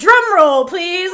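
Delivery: thrilled, loud, excited announcer-like delivery. Retelling an announcement by Auntie Nim: imitating someone excited.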